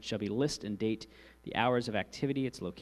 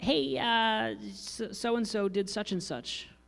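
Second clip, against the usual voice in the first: put-on little kid voice, much higher and slower; 11 semitones higher than usual. Speaker explains keeping attendance, quoting a child's claim in a little kid voice. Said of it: "that's my little Johnny voice".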